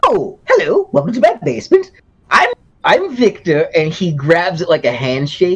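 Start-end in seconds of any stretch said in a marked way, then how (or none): 0.0-3.7 very high, sing-song, swooping character voice. Voicing a character reacting in a tabletop game: in-character voice. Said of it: "He goes".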